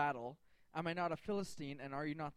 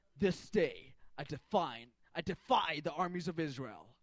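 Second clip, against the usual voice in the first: put-on mean voice; 4 dB louder than usual. Retelling the Philistine's challenge to Israel, the speaker acts out a mock-mean Goliath voice. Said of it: "He gets even meaner".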